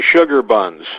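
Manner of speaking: ordinary talk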